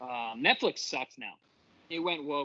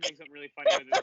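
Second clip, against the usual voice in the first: put-on giddy excitement, higher and louder; 4 semitones higher, 7 dB louder than usual. Retelling what Frankie said about Gary freaking out: imitating Frankie being giddy. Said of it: "he was giddy when he was telling me".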